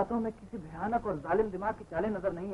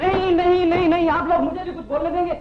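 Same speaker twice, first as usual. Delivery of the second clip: high, loud shout. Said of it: "चिल्लाने की जरूरत नहीं".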